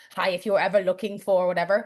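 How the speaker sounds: put-on friendly German-accented voice. Describing a movie cameo, the speaker quotes the Mercedes team principal in a German accent. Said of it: "in German accent and goes".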